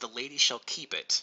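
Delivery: ordinary delivery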